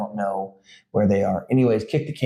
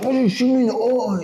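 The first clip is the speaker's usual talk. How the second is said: very high, petulant, whiny emo complaining; 13 semitones higher than usual. Retelling how players react after a shot to the eye: imitating a whiny emo kid. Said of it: "an emo kid from nineteen ninety-nine".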